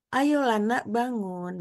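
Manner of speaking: mild, gentle, slow, unhurried coaxing tone. Showing how a mother wakes her child without being firm, in a gentle tone. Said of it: "Nanti ini lembut kan?".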